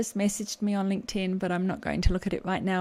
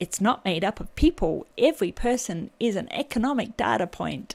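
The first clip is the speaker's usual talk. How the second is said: really bad put-on American accent. Looking at job qualifications, the speaker jokes in a really bad american accent. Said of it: "that's my really bad American accent".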